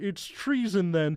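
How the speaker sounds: high-pitched puppet voice. Describing a video with Kermit the Frog as the Emperor: imitating Kermit the Frog as the Emperor. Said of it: "And then the thing where he goes".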